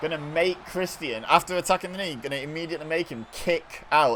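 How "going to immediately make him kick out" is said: the word kick stressed. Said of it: "Emphasis on the word kick there".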